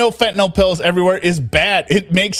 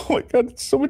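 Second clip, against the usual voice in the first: fake teary, breathy voice, almost cracking; 5 semitones higher, 5 dB quieter than usual. Imitating a woman whose fakeness you hate, use a fake teary voice, almost cracking. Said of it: "the fake, like teary, the voice crack almost".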